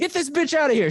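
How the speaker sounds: high, loud scream.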